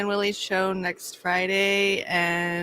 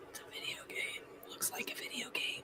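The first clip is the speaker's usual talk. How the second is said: whisper, higher pitch and quieter; 20 dB quieter than usual. Remarking quietly that something looks like a video game, whispering. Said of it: "Why are you whispering?".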